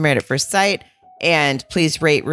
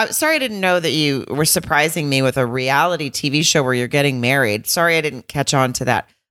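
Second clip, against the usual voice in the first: ordinary delivery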